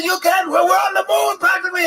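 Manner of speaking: bad, high-pitched yell. Retelling playing Schindler in a sketch, yelling: bad Liam Neeson impression, yelling. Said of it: "this fucking bad Liam Neeson impersonation".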